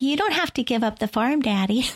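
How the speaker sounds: put-on high, small little girl voice. Imitating a movie character, a young daughter talking to her father: imitating a little girl's voice. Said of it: "Just little voice all the time".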